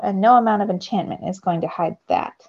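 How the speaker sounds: ordinary delivery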